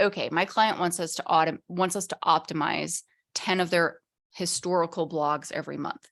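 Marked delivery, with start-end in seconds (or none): none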